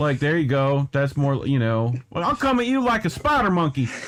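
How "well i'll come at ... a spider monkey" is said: high, put-on Southern accent. Offering to translate into Southern for a friend, in a Southern accent. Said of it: "translate into Southern for you".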